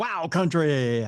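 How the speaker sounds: radio dj announcer voice. Echoing the station name after a co-host, in a radio DJ voice. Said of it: "Haven't broke that voice out in a while".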